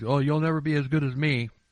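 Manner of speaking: normal talking voice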